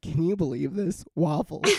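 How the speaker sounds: fake, feigned, mock offended tone. Speaker imitates the listener reacting to photos the speaker sends: mock offended. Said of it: "like mocked, like offended".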